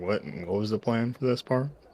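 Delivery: muttering under the breath. Asking the party quietly about the plan, under the breath. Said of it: "under my breath so that only the party can hear us".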